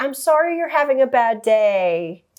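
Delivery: sarcastic sympathy, "day" stretched out. Retelling what a staff member told an angry customer: imitating someone being sarcastic. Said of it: "she kinda said it sarcastically".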